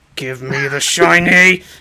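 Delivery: loud, exasperated, insistent, frustrated tone. In a tabletop game, a player voices Varn grabbing for the tome: frustrated Varn voice. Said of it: "Varn is getting more and more frustrated".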